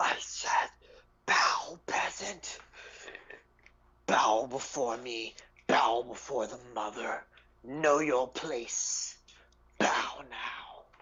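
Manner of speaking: echoing, commanding creature voice, monster-like. A game master voices a wax tentacle creature attacking a player: echoing monster voice. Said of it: "its voice echoes again".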